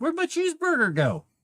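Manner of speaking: high, confused villager voice.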